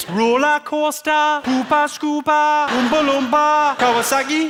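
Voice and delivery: Geordie accent with a very high voice. After naming the accent, the speaker repeats the words in a Geordie accent. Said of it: "The Geordie accent".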